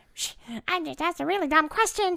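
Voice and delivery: very high-pitched inner brain voice. Teasing the other speaker after a dumb question, imitating a friend's brain voice. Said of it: "do your brain voice and be like".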